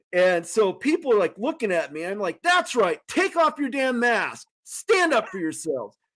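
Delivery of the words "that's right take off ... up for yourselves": put-on shouting, higher pitch. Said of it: "I'm yelling at this guy".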